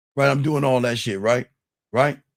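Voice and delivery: normal talking voice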